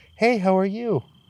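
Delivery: put-on very high little-girl voice. Retelling what a little girl's voice said: imitating a little girl's voice. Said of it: "I got a little girl. She goes".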